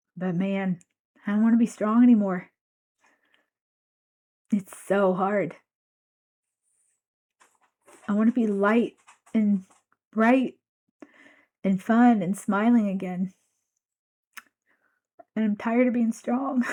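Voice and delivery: crying, tearful, weeping. Speaker thanking listeners and asking for their grace, crying. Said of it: "Damn it, I'm crying again".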